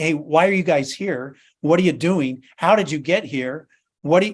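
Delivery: challenging, demanding security guard attitude. A speaker retells a guard stopping his group at the gates, imitating a guard's attitude. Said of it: "a little bit of guard attitude".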